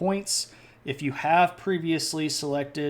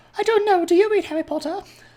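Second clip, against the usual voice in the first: bad squeaky voice, very high, shrill and loud; 8 dB louder than usual. Answering people who ask if he reads Harry Potter: Dobby voice. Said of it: "he's got the very proper, very, very low, sort of squeaky".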